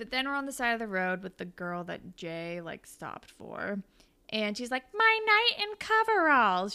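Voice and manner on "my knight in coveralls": very high, shrill, drawn-out bad acting. Recapping a TV show, quoting the roadside girl Jay stopped for, mimicking terrible acting. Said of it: "She's a terrible actress".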